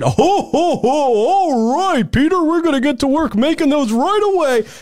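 high, jolly voice with words stretched out. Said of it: "and said".

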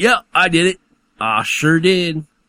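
high, put-on country hillbilly accent. Reading articles with friends, voicing a man from a news story in a hillbilly accent. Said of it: "you could do all the hillbilly accents".

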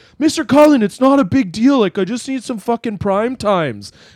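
mock very high-pitched, wasted drunken voice. Retelling a student asking for cigarettes outside a store: imitating Carson drunk. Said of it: "really, really drunk".

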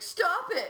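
loud, high-pitched, fed-up, angry outburst. Retelling how a man replying to a tweet lost it: imitating an angry outburst. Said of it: "And he lost it".

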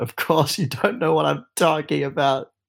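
high scream through laughter and tears. Voicing a character who breaks down laughing and crying: screaming. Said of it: "he's just gonna scream".

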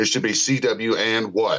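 normal talking voice

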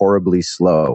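normal talking voice

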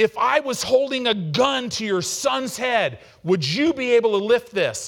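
very high-pitched, shrill, loud, furious scream. Retelling a trainer on a bench yelling at a lifter: imitating a trainer screaming. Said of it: "he's screaming".

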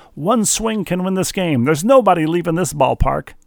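high, ballpark baseball-announcer call. Recalling word for word what the Yankee announcer said on the car radio, do a Phil Rizzuto impression. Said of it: "That's my impersonation of the scooter".

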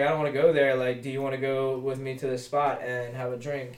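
ordinary delivery

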